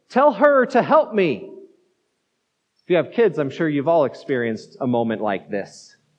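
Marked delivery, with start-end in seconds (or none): 0.2-1.5 erupting, higher-pitched, complaining outburst. Retelling a woman's command to Jesus, acting out an erupting complaint. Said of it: "she erupts in this complaint to Jesus".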